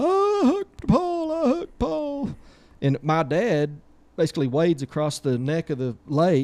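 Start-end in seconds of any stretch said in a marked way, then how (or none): 0.0-2.3 slow, drawn-out scream, pitched very high. Retelling a boy yelling after a fishing hook caught Paul: imitating Brad screaming. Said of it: "Brad goes to yelling, screaming".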